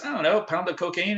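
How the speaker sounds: playful and joking. Retelling how a guy jokingly answered an offer of anything else, retelling a joking request. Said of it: "Jokingly goes".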